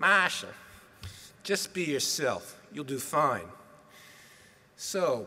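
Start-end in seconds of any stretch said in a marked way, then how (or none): 0.0-3.5 put-on Boston accent, even tone. Speaker quoting his dad's usual advice to him, in dad's boston accent. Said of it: "Chinese guy with the Boston accent".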